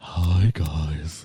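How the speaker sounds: very low, seductive, sultry radio-host voice. Describing a woman who hosts a radio show, the speaker imitates her: sultry radio host voice. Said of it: "She's all kind of sultry and like".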